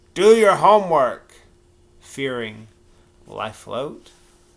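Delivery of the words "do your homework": put-on slurring, very loud. As he finally falls asleep, someone calls out after a door slams, slurred voice. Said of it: "a slurred voice".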